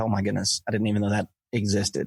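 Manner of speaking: ordinary talk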